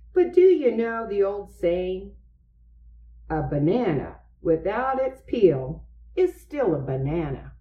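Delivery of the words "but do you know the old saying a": usual speaking voice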